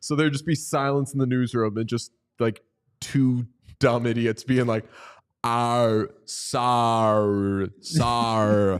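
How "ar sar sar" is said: put-on Australian accent, stretched vowels, sar drawn out.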